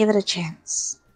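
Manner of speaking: whispered voice. Reassuring a character while giving him a squeeze: whispering. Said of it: "just kinda whisper".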